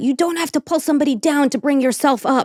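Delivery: firm, loud calling out, screaming. Retelling a line screamed out the door: imitating someone screaming. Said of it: "he screamed out".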